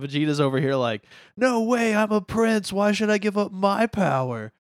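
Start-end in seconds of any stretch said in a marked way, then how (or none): 1.4-4.5 very high, slow, drawn-out whine. Retelling a scene from the movie, imitating Vegeta: whiny Vegeta imitation. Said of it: "He just whines the whole movie".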